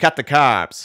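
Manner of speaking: put-on very loud, high yelling in thick Boston accent. Recalling a dude in a bagel commercial, imitating him yelling in a thick Boston accent. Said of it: "this thick Boston accent going".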